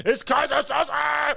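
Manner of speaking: put-on shrill, very high, rough yelling shout. Retelling a movie scene where a cowering man shouts: imitating a shout. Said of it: "he just, like, shouts it".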